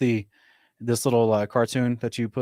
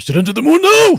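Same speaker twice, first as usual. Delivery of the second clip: very high, very loud, fake Japanese accent; 14 dB louder than usual. Joking about a probe crashed into the moon: put-on Japanese accent, raised pitch. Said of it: "I'm not speaking proper Japanese, uh, dialect".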